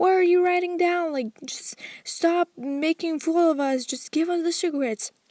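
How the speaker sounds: mock high-pitched, shrieking, angry screaming rant. Retelling how a mother and daughter screamed at a lady: imitating people screaming. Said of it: "They both start screaming".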